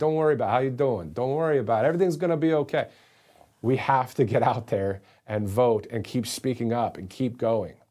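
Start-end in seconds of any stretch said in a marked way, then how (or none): 0.0-2.9 quick put-on Italian accent all the way through. Speaker decides on a whim to keep talking in an Italian accent. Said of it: "I feel like doing it with an Italian accent".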